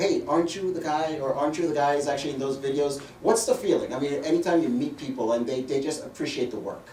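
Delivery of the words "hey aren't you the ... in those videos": usual speaking voice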